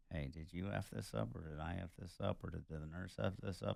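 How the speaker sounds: very quiet, hushed half-whisper. Retelling how they half-whispered to each other: imitating a half-whisper.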